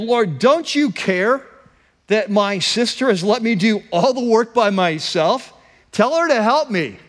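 put-on, sassy, fed-up, irritated tone full of attitude. Retelling a woman's complaint to the Lord in a Bible story: mock-sassy retelling. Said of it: "you can hear the sass in her voice".

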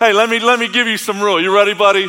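mock playful teasing. Retelling how he once pictured Jesus, testing a man: Jesus mockingly punking someone. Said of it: "Jesus is just messing with this guy".

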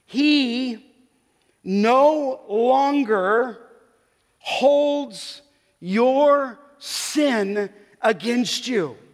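very slow, every word deliberate, "he" drawn out. Speaker repeating a point more slowly for listeners, said slowly. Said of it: "maybe I should say it slowly".

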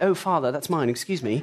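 put-on slight British accent. Retelling what he said to his father while living in England, slight British accent. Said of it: "so I had a bit of a British accent".

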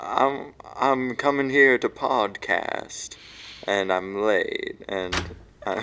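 drawn-out, slow delivery. Imitating a late co-host rushing over to podcast: impression of the late co-host. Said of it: "I didn't mean to interrupt your impression".

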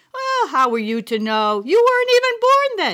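said through a laugh. Grandma answering her grandchild, laughing. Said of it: "she laughed".

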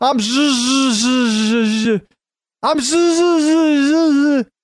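high, very slow stammer, stuck stalling on the z. Retelling how the Fonz could never apologize: imitating the Fonz failing to say sorry. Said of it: "Remember how hard it was for him to say".

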